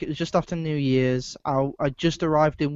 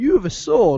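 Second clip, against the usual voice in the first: put-on thick English accent, higher pitch; 6 semitones higher, 3 dB louder than usual. Imagining a guy with a sword speaking to you: imitating a thick English accent. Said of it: "with a thick English accent and just went".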